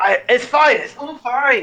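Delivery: loud insistent voice. A player answers as Bellinor after being asked about traps, quite loudly. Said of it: "Quite loudly, Bellinor says".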